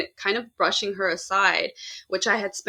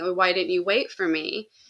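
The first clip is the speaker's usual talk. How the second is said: mock-crying little girl voice. Recounting a recurring dream about a little girl, imitating a crying little girl. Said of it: "she'd be crying".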